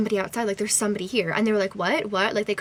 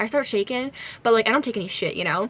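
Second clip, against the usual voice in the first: plain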